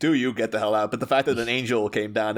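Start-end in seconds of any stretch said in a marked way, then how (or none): 0.0-0.9 restrained, held-back divine-sounding voice. Imagining God ordering someone out, booming God voice. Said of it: "just booming voice was just like".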